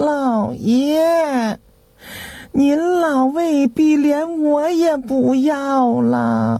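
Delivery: very high, coy, sugary, coquettish cutesy voice. A girl catches up with the departing master and speaks, in a coquettish, cutesy voice. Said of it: "嗲声嗲气地说".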